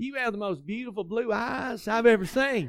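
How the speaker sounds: strong southern drawl. Retelling what he said to the woman who became his wife, strong southern drawl. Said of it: "it was a very strong southern drawl, so it was something like this".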